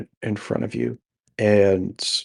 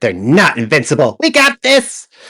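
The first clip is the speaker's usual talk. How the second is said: loud, swooping, gloating voice; 4 semitones higher, 5 dB louder than usual. Voicing a little enemy who watches a foe fall: the little guy gloating. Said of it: "the little guy standing over him, uh, sees him fall and goes".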